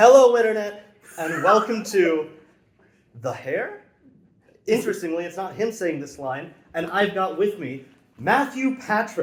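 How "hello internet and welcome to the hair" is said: little upward lilt at the end, on "The Hair". Opening a show with a welcome line, rising intonation at the end. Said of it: "add the little intonation up at the end".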